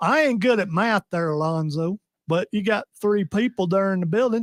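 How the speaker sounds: thick put-on Southern accent, rising high at end. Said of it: "impersonation of Odie doing a Southern accent".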